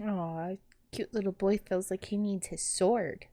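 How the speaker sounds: hushed whisper. A player speaks to a companion about an armed man nearby, whisper. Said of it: "I said that in a whisper".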